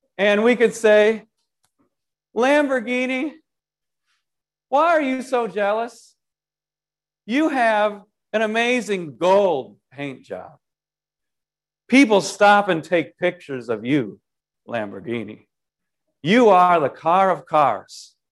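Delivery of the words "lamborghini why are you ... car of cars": swooping sarcasm, every word insincere. Acting out speaking to a parked Lamborghini, put-on sarcastic tone. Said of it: "this is pure sarcasm".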